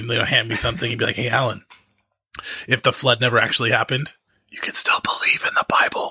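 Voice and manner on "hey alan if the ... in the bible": mimicked whisper. Retelling how a friend passed on forbidden ideas: imitating a friend whispering.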